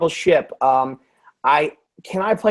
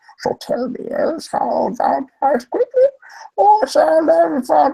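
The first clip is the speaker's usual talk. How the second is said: very high, hard-to-hold put-on character voice; 11 semitones higher than usual. Reading a Shakespeare-style Star Wars scene in character: Bane voice. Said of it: "my Bane voice is not sustainable".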